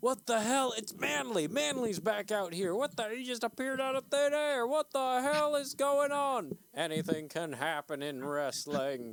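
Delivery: very high-pitched wrestling ring announcer voice. Voicing the announcer as Manly appears: wrestling announcer voice. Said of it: "And the announcer's like".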